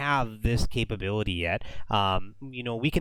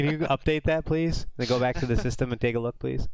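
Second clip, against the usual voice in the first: put-on, dry, heavily sarcastic delivery; 2 semitones higher than usual. Playing a customer asking for updates during a demo: put-on sarcastic customer request. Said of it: "I'm being very, very sarcastic here".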